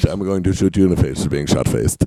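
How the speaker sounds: deep, mannish put-on voice. Retelling what his mom wanted to do, imitating her in a deep manly voice. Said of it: "when you do my mom, she sounds so manly".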